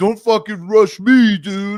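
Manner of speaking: put-on play-acted loud, drawn-out drunk drawl. Retelling a blackout drunk guy swaying at the tee: imitating a blackout drunk guy. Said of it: "he's just swaying around, like".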